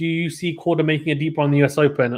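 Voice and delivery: normal talking voice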